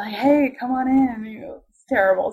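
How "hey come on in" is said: put-on flirty, come-hither, slow, seductive voice. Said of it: "seductive and stuff".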